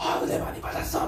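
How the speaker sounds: soft, near-whispered, hoarse voice, cried-out.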